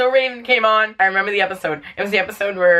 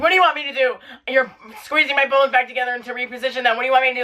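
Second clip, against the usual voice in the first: loud high-pitched yell. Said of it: "I'm yelling at the dog".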